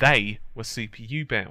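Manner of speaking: clear prominent stress on the word "they".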